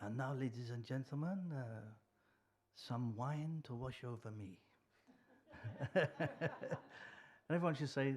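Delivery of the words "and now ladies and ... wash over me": imitated foreign accent in English. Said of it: "in his inimitable accent".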